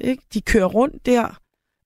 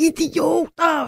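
slow, high-pitched shouting. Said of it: "rulle vinduet ned og råbe".

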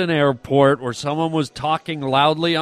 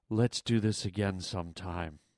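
put-on, imitated sexy, seductive voice; 8 semitones lower, 12 dB quieter than usual. Retelling what she said at the door: imitating a sexy voice. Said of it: "in the sexiest voice you've ever heard".

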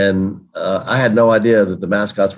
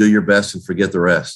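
ordinary delivery

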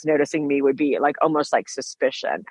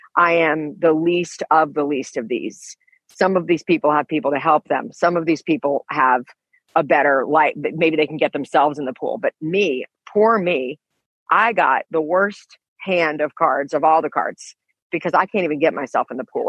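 normal talking voice

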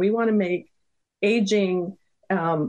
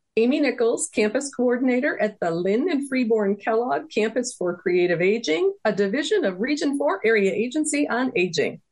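rushed without pause, all in one breath; 3 semitones higher than usual. A guest saying her long title for listeners, all in one breath. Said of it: "I can say it in one breath".

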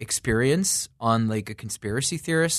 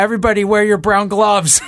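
screamed at full volume, very high-pitched; 9 semitones higher, 11 dB louder than usual. Retelling a moment on set when someone yells an instruction, retelling a scream. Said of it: "Mike just screams out".

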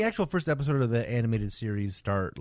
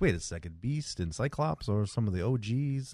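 usual speaking voice

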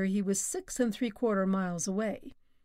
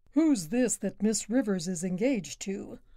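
plain

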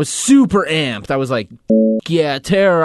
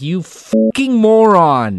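angry, scolding tone, pitched up; 6 semitones higher, 4 dB louder than usual. Retelling how mom reacted after the emergency room: imitating angry mom. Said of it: "she was so pissed".

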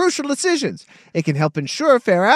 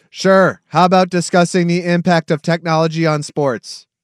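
robotic voice, lower; 5 semitones lower than usual. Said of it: "In a robot voice".

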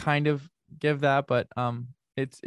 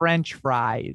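Australian speaker putting on a fake American accent. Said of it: "an impression of an Australian person doing an American accent".

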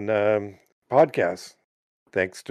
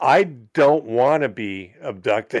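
ordinary talk

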